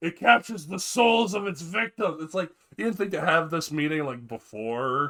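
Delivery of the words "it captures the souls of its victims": put-on burly man voice, pitched higher. Retelling a movie scene set on a plane: burly voice. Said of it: "this burly voice".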